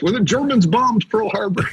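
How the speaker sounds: very high-pitched comic movie-character voice. Quoting a movie line after saying the other speaker sounded like John Belushi: John Belushi in Animal House. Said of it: "You sounded like John Belushi in Animal House".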